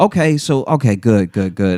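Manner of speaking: put-on, very professional, businesslike tone. Imitating the other speaker arriving at the show: imitating someone being very professional. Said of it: "very professional".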